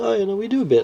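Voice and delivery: high, casual, nonchalant shrug-like delivery.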